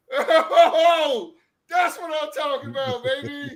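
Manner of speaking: stretched-out hyped whoop, very high and slow. Reacting to something just watched with another speaker: hyped excited reaction. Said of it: "Love the reaction".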